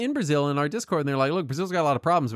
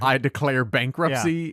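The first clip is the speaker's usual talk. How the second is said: normal talking voice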